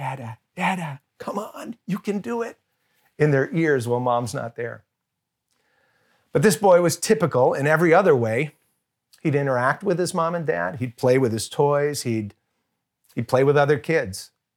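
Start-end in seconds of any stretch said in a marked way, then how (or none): 0.0-2.6 hushed, soft, coaxing and urging half-whisper. Retelling how dads coax their babies to say Dada: imitating a half-whisper. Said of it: "just whispered".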